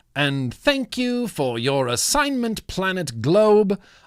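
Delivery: English accent, tried on. Thanking someone, use a put-on english accent. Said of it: "I hope that my English accent is good enough".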